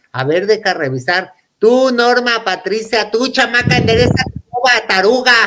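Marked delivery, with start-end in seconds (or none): 1.5-5.4 high-pitched mock yelling, scolding tone. Retelling how a relative yelled at one of her daughters, retelling a yell. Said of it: "Así le gritaba".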